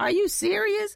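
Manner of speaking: high, loud disbelieving exclamation.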